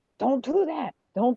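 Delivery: mock toned-down, high, mild frustrated kid outburst. Retelling how the grandson played video games online: imitating grandson screaming. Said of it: "sometimes he would scream".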